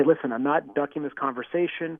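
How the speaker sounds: ordinary delivery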